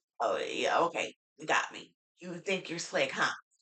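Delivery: breathy, whispered, changed put-on voice. Retelling what someone said on the show: imitating her changed voice. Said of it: "when she changed her voice".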